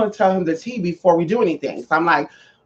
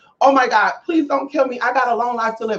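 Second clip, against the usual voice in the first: desperate, frantic, high-pitched panicked pleading; 5 semitones higher, 5 dB quieter than usual. Retelling men circling the car, acting out past panicked pleading. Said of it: "I'm panicking".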